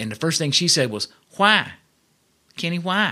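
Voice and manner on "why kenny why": put-on drawled Texas accent, pitched up. Telling how his mom answered his request: imitating his mom's accent. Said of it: "So that's just that accent".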